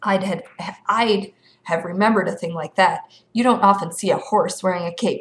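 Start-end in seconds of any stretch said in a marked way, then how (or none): none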